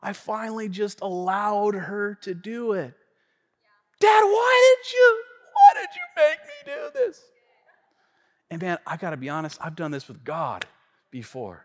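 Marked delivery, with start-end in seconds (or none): 4.0-7.2 put-on tearful crying child voice, much higher. A father acting out his daughter's words to him, imitating a tearful daughter. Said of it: "She looked at me with tears in her eyes".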